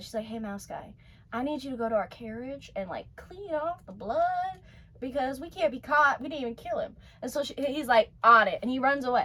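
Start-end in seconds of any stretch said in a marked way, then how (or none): 0.3-6.2 soft, hushed, secretive stage half-whisper. Retelling a story, the speaker acts out a woman half-whispering to the mouse guy. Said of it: "she like whispers to the mouse guy".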